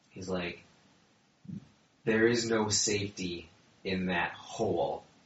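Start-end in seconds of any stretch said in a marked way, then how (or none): 2.0-4.9 voice edged with creeping madness. Narrating a game scene, the storyteller voices Boothel with a sort of madness in his voice. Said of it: "speaking with a sort of madness to his voice".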